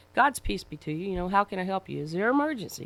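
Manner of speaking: friendly, kind, genial and jovial. Retelling greeting an officer at a traffic stop: imitating own kind, jovial tone. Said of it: "trying to be kind and jovial".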